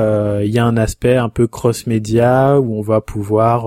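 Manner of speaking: ordinary delivery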